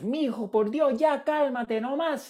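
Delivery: play-acted very high, exasperated, fed-up mother's hollering. Retelling his mother talking to him as a hungry, crying child: imitating mother hollering. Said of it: "my mother would come in hollering about something or other".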